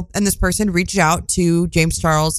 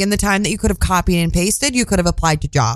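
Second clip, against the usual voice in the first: ordinary talk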